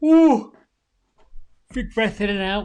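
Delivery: big, very loud yawning breath through the words. Leading a relaxation exercise, giving a breathing instruction, yawning. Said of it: "I'm sorry, I'm yawning".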